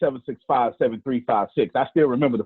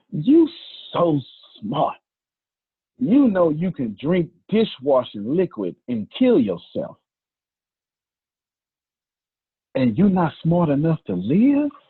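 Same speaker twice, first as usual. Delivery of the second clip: put-on icy, dead-calm voice, swooping pitch; 4 semitones higher than usual. Retelling what she said on catching the speaker drinking dish soap: imitating a very calm, cold voice. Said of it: "in the calmest, tempest voice".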